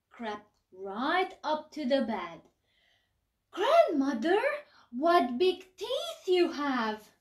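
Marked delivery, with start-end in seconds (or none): 3.5-7.0 put-on high, loud, storybook-girl style crying out.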